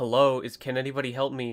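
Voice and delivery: put-on attitude-filled voice. Retelling a customer at the service desk: imitating a customer with attitude. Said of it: "she has such an attitude".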